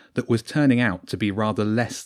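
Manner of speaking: ordinary delivery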